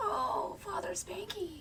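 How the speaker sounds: high breathy seductive coo.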